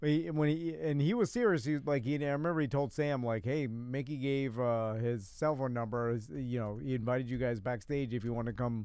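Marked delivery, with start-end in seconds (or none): none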